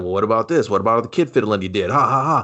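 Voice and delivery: imitated mock-snarky tone. Retelling a movie scene where a character taunts an interviewee: retelling a snarky taunt. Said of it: "is just like".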